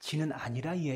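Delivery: put-on southeastern Gyeongsang dialect, regional accent. Joke where a gyeongsang criminal answers a seoul police officer, gyeongsang dialect. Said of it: "경상도 사람인 범인이".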